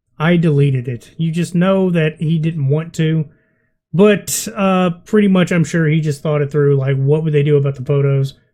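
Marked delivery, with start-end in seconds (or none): 0.2-1.2 mock defeated tone, lower. Retelling words from a video: imitating a defeated tone. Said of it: "You can hear the defeat in his voice".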